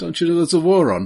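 put-on Birmingham accent. Speaker demonstrates the phrase he uses for doing accents, in a brummie accent. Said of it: "for Brummer, I use".

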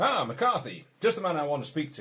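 very loud, high, shrill call across a distance. Voicing a smartly dressed man who jumps from a carriage: shouting across to someone. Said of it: "shouts across to McCarthy".

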